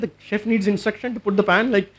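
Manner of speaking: usual speaking voice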